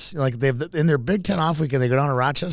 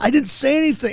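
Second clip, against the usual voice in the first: put-on mimicked thirteen-year-old kid voice, pitched higher; 12 semitones higher, 4 dB louder than usual. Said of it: "like a little thirteen-year-old kid".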